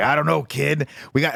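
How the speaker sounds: raspy voice like a thirties newsman. Describing a film character who suddenly changes voice, doing the Thing's 1930s reporter voice. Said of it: "starts talking like a nineteen thirties news reporter".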